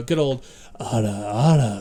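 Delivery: husky, loud delivery.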